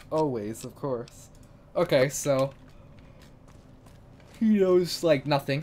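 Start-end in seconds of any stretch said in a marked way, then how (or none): 1.8-5.6 very loud, drawn-out talking through a yawn. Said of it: "Sorry I'm yawning".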